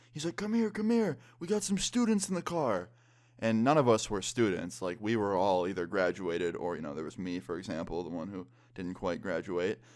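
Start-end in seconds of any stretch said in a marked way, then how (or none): 0.4-2.9 high yell. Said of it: "starts yelling his name".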